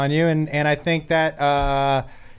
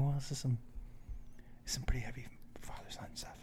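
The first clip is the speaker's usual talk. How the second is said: acted crying, lower and much quieter; 3 semitones lower, 21 dB quieter than usual. Retelling answering a woman in the theater who asks why he's crying, acting out his own crying. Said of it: "you're crying. Why are you crying?".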